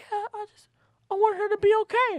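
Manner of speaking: put-on earnest, very high, sweet, innocent childlike voice.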